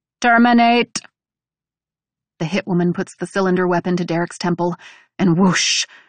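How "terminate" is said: loud, high-pitched, mechanical robot voice. Narrating a story where a character gives a command, in a robot voice. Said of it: "in a robot voice".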